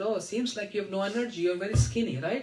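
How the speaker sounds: ordinary delivery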